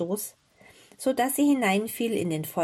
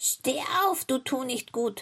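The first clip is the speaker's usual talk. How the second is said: croaky, high-pitched witch call; 5 semitones higher than usual. The wicked witch shakes the girl awake and calls to her: croaking call. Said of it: "rief mit ihrer krächzenden Stimme".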